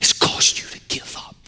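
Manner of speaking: soft, hushed whisper sounding defeated.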